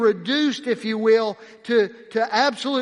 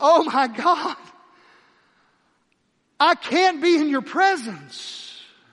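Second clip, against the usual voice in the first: acted, agitated, overwhelmed, pitched-up outcry, far from calm; 5 semitones higher than usual. Retelling Peter's words before Jesus, contrasted with calm prose: voicing Peter, not calm. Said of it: "He didn't say it with the calmness".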